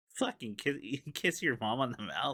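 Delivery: character voice, stumbling over the word kiss. Retelling a movie scene where an actor says a line: imitating Tim Robinson. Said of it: "a cut to Tim Robinson going".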